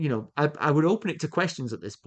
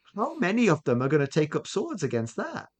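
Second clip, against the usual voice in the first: plain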